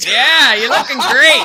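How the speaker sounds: put-on drunk voice. Host acts out what someone says after many beers, imitating a drunk person. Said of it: "somebody says to you after about eighteen beers".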